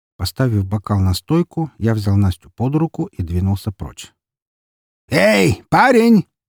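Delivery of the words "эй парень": very high, loud shouted call. Someone calls out to the narrator from behind as he walks away: shouted call. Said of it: "раздался позади меня окрик".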